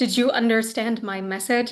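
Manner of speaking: ordinary delivery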